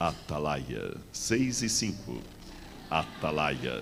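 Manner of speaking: put-on loud, very slow, old-time radio announcer voice. Retelling how a morning radio program began: imitating an old radio announcer. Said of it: "aquela voz de locutor antigo".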